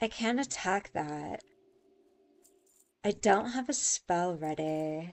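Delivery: play-acted, smug, talking-down, condescending narrator voice. Gamer imitating the game's built-in voice lines, in a mock-condescending game voice. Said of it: "It's the same voice that's like".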